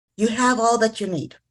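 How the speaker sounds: normal talking voice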